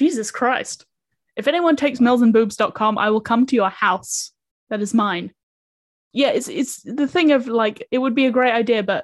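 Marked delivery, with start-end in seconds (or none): none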